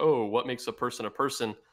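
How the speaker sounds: ordinary delivery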